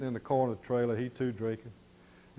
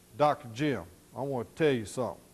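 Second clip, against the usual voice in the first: put-on serious, grave, upset tone. Retelling a foreman turning to the client: imitating a serious, upset tone. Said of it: "the inflection in his voice that he was serious and that he was upset".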